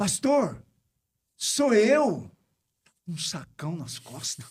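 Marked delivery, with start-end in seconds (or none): 0.0-2.3 very high, calling shout. Retelling a woman calling from the gate before dawn: imitating a shout. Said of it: "Aí ela gritou".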